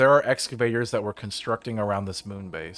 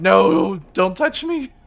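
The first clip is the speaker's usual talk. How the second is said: acted voice, much higher, louder; 9 semitones higher, 7 dB louder than usual. Telling how the Astro Zombie greeted them, the speaker retells their own past reaction. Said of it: "And I'm like".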